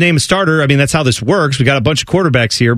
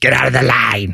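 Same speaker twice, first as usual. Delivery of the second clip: small, creaky, comic voice; 2 semitones lower than usual. Describing John Panette's Dairy Queen bit to another speaker; John Panette's little voice. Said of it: "He has this little voice he does".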